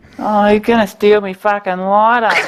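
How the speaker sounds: very high-pitched, put-on Australian bogan accent. Asked to go back to an earlier bit, repeat it in a put-on bogan accent. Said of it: "Will Power does have a bit of a bogan accent".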